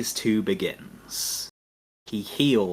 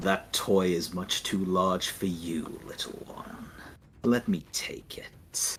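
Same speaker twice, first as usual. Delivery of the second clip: contemptuous, sneering put-on dragon voice; 3 semitones lower, 5 dB quieter than usual. Voicing a dragon as the game master: sneering dragon voice. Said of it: "He sneers at you and says".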